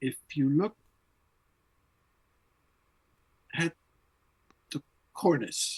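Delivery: slow, halting, drawn-out speech with pauses. Recalling a man's long, in-depth talk, imitate how he talks. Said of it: "he speaks like this".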